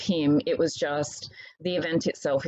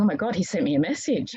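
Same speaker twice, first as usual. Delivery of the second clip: mock gasping, over-breathing, breathless hyperventilating outburst; 2 semitones higher than usual. Retelling reading a message he sent, mock hyperventilating. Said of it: "I'm there more hyperventilating".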